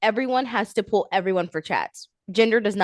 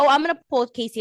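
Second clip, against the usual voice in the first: acted, breezy, cocky, matter-of-fact, offhand delivery; 4 semitones higher than usual. Retelling how Melanie announced pulling Casey: imitating Melanie's cocky tone. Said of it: "a little, like, cocky".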